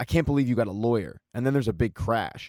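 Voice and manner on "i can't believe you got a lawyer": ordinary talk, nothing marked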